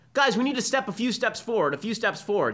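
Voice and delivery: high-pitched, loud yell.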